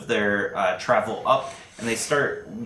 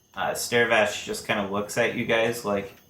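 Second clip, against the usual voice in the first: ordinary talk, nothing marked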